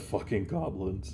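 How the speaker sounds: muttered, mumbled under breath. Game narrator voicing the sheriff reacting to a player's story, muttered under breath. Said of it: "you just hear my mutter under his breath".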